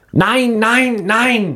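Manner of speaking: play-acted piercing, very high-pitched shrill screech. Telling a story about a partner, imitating her screaming. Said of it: "she started screaming".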